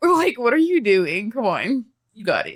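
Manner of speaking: joking, sarcastic, sing-song delivery. Retelling how talking to oneself goes: imitating own sarcastic self-talk. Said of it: "it's always, like, sarcastic and it's always jokingly".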